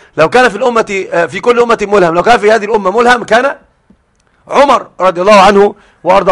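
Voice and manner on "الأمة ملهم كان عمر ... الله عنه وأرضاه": ordinary talk, nothing marked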